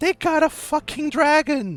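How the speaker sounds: very high, horrified shriek. Voicing sewer elves as two heroes leave the room: sewer elves shouting. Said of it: "you just hear shouts from the sewer elves".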